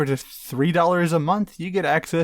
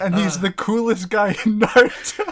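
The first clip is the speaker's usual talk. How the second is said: words cracking, talking through laughter; 4 semitones higher, 4 dB louder than usual. Praising a huge toad character to another speaker, laughing while talking. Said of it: "you couldn't even get through that without laughing".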